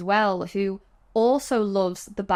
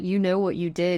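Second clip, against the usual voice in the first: mock bone-dry, level, monotone deadpan delivery; 4 dB quieter than usual. Speaker quotes Greta talking to the dead Baroness, imitating Greta's deadpan. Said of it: "she deadpans".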